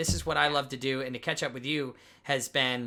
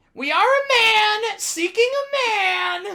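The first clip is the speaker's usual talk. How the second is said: very high, loud, shrill, drawn-out shout; 10 dB louder than usual. Doing a short impression of a Charlie Day movie line: Charlie Day impression. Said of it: "This is Charlie Day in Horrible Bosses".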